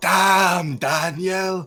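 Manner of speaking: exaggerated Japanese accent, high, stretched "damn". Retelling a heard impression in an exaggerated japanese accent. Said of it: "They're like".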